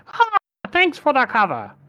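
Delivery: very high, swooping, screeching raven voice. Game master voicing a character in were-raven form, were-raven voice. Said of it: "that's what her voice sounds like when she's in were-raven form".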